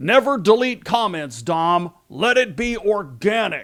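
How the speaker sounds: very stern, severe, scolding, admonishing tone. Recalling a coworker scolding him over deleting comments: mimicking a very stern voice. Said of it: "In a very stern voice".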